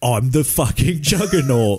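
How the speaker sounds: menacing British tough-guy movie-heavy delivery. Asked to say the line how the actor says it: Vinnie Jones voice. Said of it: "can you please say it how he says it?".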